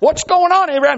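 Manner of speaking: loud high call.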